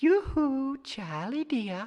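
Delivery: tinkly, clear little voice. Reading a story where a voice calls from by the weir-gate, tinkly and clear. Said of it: "tinkly and clear, a pretty little voice says".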